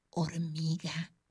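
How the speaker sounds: murmuring, very close and soft. Passing Concha on the way to her seat, she speaks, murmuring in her ear. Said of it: "le murmuró al oído".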